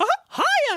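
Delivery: very high-pitched cartoon mouse voice. Answering a roll call of imaginary listeners: Mickey Mouse voice. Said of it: "Guy who sounds like Mickey Mouse".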